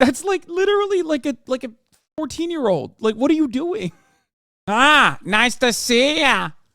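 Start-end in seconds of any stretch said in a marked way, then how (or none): 4.7-6.5 put-on nasal voice, higher and louder. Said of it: "if Ben Shapiro was more nasally".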